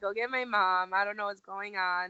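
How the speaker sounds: plain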